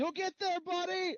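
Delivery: loud, very high call carried at distance. Playing a character calling after a classmate walking away: calling out loudly. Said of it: "I call after him".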